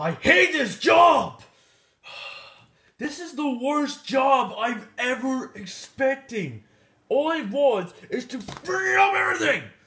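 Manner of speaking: shrill, angry, furious shouting rant. A character rants about hating his job and his life: angry yelling. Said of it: "why are you yelling at?".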